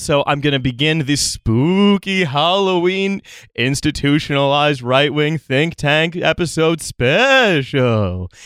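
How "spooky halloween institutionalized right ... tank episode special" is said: slow, drawn-out, eerie put-on ghost voice. Podcast host opens the Halloween episode special in a spooky ghost voice. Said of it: "It's very hard to talk in that ghost voice".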